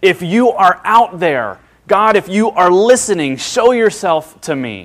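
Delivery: loud, high, longing, drawn-out scream. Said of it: "just screams out".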